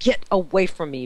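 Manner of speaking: very mean, harsh tone. Retelling pulling a child's finger off, retelling being very mean. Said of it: "Very, very mean".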